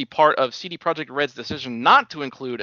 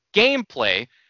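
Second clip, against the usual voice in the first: gameplay hit hard and punched out with heavy stress; 3 semitones higher, 4 dB louder than usual. Covering the Inside Xbox showing of games: heavy stress on gameplay. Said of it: "I'm going to stress that word".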